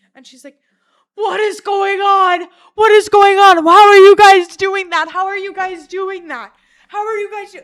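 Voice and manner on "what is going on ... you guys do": frantic shrieking, very high and very loud. Retelling how a friend's mom reacted to strange behavior, imitating her losing it. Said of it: "like, losing it".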